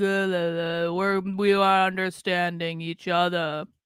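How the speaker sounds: mock lifeless, flat, slow, empty-sounding drone. Mocking a woman speaking in a video: imitating a dead-inside voice. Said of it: "all their voices sound dead inside?".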